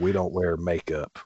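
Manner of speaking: dry, flat, low and quiet deadpan. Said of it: "[name] just deadpans him".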